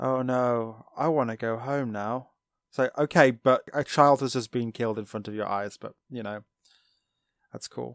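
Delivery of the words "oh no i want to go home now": play-acted very slow, flat, emotionless monotone. Mocking a character's reply right after a child was killed, mock-emotionless delivery. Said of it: "I'll just be emotionless".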